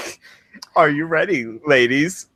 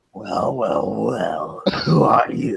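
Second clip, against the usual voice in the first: low, rough, gruff voice; 5 semitones lower than usual. Narrating a story, voicing Ulrich questioning the listener, gruff Ulrich voice. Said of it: "A gruff voice questions you".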